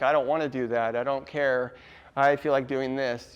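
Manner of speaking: usual speaking voice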